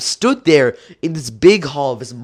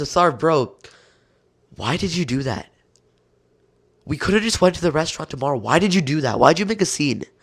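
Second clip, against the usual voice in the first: mock disappointed, disgusted tone, quieter; 4 dB quieter than usual. Retelling his mom scolding him in the car, imitating her disappointed disgust. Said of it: "expression of disappointment and almost disgusted as she says".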